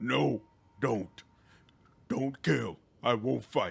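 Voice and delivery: slow, laborious, clipped words forced out with difficulty. The narrator voices the Minotaur, speaking with difficulty in short clipped words. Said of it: "speaks with difficulty in short, clipped words, which he articulates slowly and laboriously".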